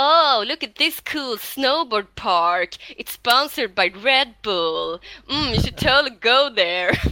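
slow, drawled, obnoxious, super-annoying bro voice. Speaker mocks the voice that interrupts exploring new mountain peaks; imitating a super-annoying voice. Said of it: "det är verkligen en superjobbig röst".

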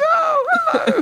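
tiny, very high, little squeaky voice. Retelling how a massive leader greeted him: little squeaky voice. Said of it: "a little squeaky voice".

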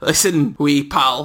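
broad, exaggerated Scottish accent. Acting out Fergie, who flew to Mexico to say this, in a Fergie voice, broad Scottish accent. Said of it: "if I do Scottish".

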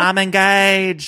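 put-on thick Southern accent. Imitating Brittany getting overwhelmed: imitating Brittany's Southern accent. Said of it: "She's really leaning into the Southern accent".

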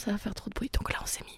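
soft, unvoiced whisper.

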